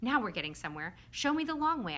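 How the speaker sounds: ordinary delivery, nothing marked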